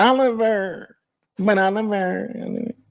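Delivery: high, slow, mocking skeptical voice.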